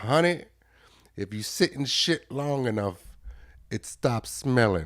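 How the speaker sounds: imitated woman's voice. Quoting a remembered lady, imitating the lady's voice. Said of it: "She talks like this".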